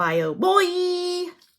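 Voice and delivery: put-on Boy pitched high, drawn out.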